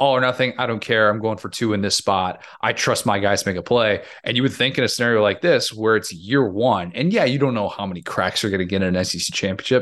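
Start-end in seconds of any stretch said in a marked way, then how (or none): none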